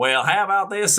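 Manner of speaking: high put-on Texas twang, laid on. Describing recording with someone from texas, in a put-on texas twang. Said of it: "have like that like twang to it".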